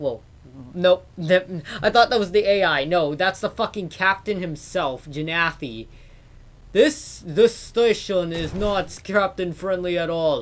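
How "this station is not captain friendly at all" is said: mock Russian accent, louder. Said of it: "because he has a Russian accent".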